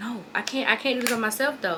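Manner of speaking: ordinary delivery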